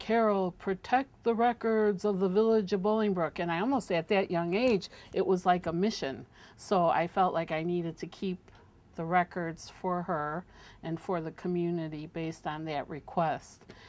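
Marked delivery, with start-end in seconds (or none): 0.0-3.4 booming, godlike, oracle-like pronouncing voice. Retelling what a tall woman told the speaker as she left, in a godlike voice. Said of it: "almost like in a godlike voice".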